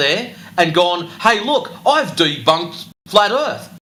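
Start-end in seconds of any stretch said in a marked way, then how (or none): 1.2-3.7 mocking, scornful delivery. Mocking what a wannabe YouTube kid says: mocking a wannabe YouTube kid. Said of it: "one of those wannabe YouTube kids that's gone".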